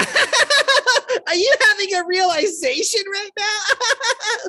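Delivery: play-acted, very slow, very high cackle. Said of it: "this cackle".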